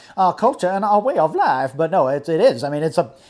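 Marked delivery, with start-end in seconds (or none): 0.2-1.7 high, swooping sixties Southern politician oratory. Repeating own earlier phrase: mock 1960s Southern politician voice. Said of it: "I sounded like a, you know, nineteen sixties Southern politician".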